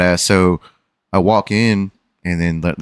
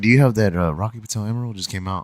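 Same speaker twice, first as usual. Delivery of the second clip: hushed, confidential half-whisper; 3 semitones higher, 4 dB quieter than usual. Retelling asking someone about the emeralds while looking around, reenacting a half-whisper. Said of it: "but I'm like whispering".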